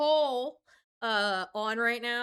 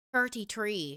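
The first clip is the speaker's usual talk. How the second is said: playful fake Irish accent; 3 semitones lower than usual. Speaker showing their Irish on a short phrase, put-on Irish accent. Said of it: "That's my Irish".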